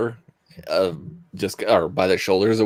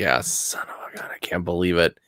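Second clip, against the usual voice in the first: muttering, much quieter; 6 dB quieter than usual. Describing what Arthur says to himself while looking it over, muttering to himself. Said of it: "muttering to himself".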